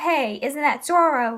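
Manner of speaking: ordinary talk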